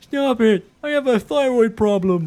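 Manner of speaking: very high, squeaky mock voice. Repeating the other player's line back as an imitation. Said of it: "Actually, not bad. Work on it".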